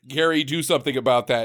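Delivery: ordinary delivery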